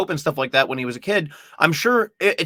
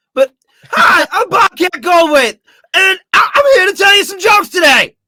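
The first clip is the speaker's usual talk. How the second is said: unsure, very high voice jumping octaves; 8 dB louder than usual. Working out an impression with a friend, the speaker tries an unsure Bobcat Goldthwait impression. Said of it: "just a little more unsure than this".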